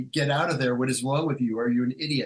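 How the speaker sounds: ordinary talk, nothing marked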